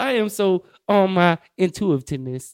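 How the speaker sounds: slow, loud, deliberate over-enunciation of every syllable. Imitating how t.i. talks, t.i. impression enunciating every syllable. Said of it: "why do you have to enunciate every fucking syllable".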